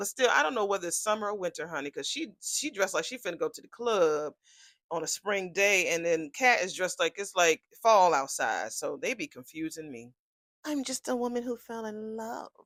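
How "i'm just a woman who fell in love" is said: put-on, all-innocent, sweet-sounding pleading voice. Retelling a character's line while recapping a scene: imitating someone sounding innocent. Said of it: "Try to sound all innocent".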